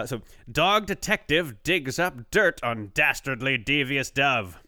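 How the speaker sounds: newscaster voice with headline-style delivery. Speaker shares the next item with a co-host in their best newsy voice. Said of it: "My best, like, newsy voice".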